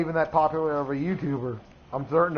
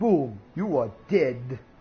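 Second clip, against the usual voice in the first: slow, deliberate, put-on Russian accent; 3 semitones lower than usual. After hearing an explosion, speaker jokes: Russian accent. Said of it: "In a Russian accent and everything".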